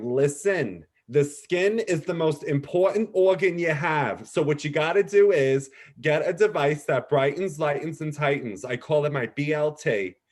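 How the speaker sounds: put-on New York Long Island accent. Retelling what a beauty brand representative once said, imitating a Long Island accent. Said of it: "she said in a very typical Long Island accent".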